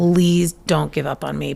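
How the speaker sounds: mock tearful voice. Retelling how a child begged while sobbing: imitating a sobbing plea. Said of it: "he's sobbing".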